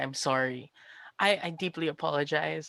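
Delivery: fake-tearful, put-on sorry influencer tone. Pretending to stare into a camera like a YouTuber: mock YouTuber apology. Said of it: "if there was a camera, I'd be staring at it, going like".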